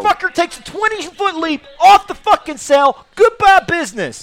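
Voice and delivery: very high-pitched, shrill, loud outburst. Doing a quick bit after others urge a Jim Cornette impression. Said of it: "my Jim Cornette?".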